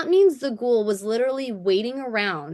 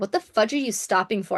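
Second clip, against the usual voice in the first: ordinary talk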